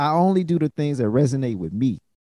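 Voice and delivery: ordinary talk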